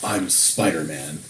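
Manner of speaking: gruff interrogator voice. Imitating a friend saying a line in the interrogation mode voice. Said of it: "In the interrogation mode voice".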